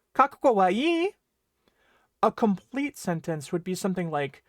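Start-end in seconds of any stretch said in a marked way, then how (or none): 0.2-1.1 pitch rises at the end on ii. Explaining Japanese question intonation, saying the phrase with rising pitch on final ii. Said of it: "Japanese is going to use the rising intonation to convey a question".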